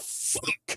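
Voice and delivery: put-on breathy, whispered, blurted swear. Retelling breaking character onstage: imitating own frustrated outburst. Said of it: "totally breaking character".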